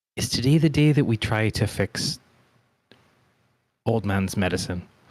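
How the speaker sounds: muttering under breath. Voicing a character asking about the old man's medicine: muttering under breath. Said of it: "under my breath".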